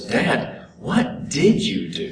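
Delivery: mock worried, very slow, very drawn out. Speaker retells a son asking his dad a question: imitating concerned voice. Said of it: "he asks kind of a concerned voice".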